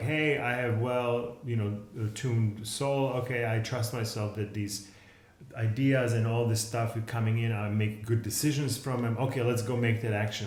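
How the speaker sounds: plain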